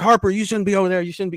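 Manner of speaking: quick, rushed scolding. Telling a story about a dad yelling at his kid harper: retelling the dad's yell. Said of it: "he's yelling at Harper".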